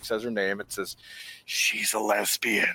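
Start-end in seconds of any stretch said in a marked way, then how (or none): 1.4-2.7 secretive, voiced stage whisper, like a juicy secret. Retelling what a coworker leaned in to say: imitating a whisper. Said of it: "leans in to whisper it at me".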